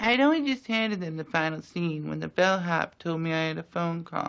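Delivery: high, lisping, literary-sounding voice. Telling about handing over a final scene: Truman Capote voice. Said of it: "Impersonation of Truman Capote".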